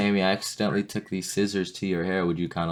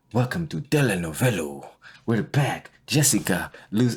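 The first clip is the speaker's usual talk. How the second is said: slow put-on Spanish-language TV host accent; 2 semitones higher than usual. Imitating a telenovela show opening in a put-on accent. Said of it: "I did a better accent than you".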